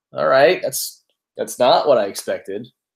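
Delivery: ordinary talk, nothing marked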